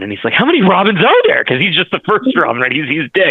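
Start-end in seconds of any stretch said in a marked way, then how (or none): 0.3-1.4 play-acted flustered, alarmed, panicked, high voice. Retelling a comic scene where the first Robin asks, imitating a panicked character. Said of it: "So he's all panicked".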